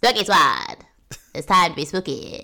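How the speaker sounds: faux transatlantic accent in a spooky horror-host voice. Podcast co-host calls out the fans' group name: faux transatlantic spooky voice. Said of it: "My spooky voice is like Spooky Squad".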